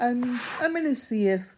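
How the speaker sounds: talking through a yawn. Parent describing bedtime with their child, yawning while talking. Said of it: "sorry, I'm yawning".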